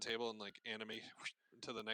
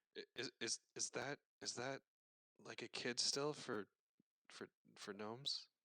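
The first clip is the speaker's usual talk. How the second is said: whispered in a character voice. Voicing Garen asking a question into someone's ear: whispering in character. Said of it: "Garen's gonna whisper in your ear".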